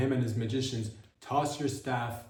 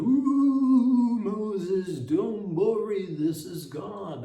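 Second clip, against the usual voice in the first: ooh drawn out, slow and big; 9 semitones higher, 6 dB louder than usual. Speaker imagines how God would speak to Moses: God voice. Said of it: "that's the way God sounds".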